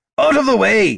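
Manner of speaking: shrill, very high, loud shout. Reading a fight scene aloud, Gorm shoulders the bard aside, shouting. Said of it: "Gorm shouted".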